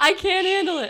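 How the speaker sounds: very high, upset, emotional yelling. Reacting to a sad movie scene while tearing up: yelling while upset. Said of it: "Sorry, I'm yelling".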